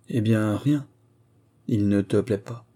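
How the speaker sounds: plain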